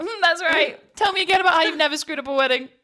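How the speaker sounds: smug, gloating tone, high-pitched and loud.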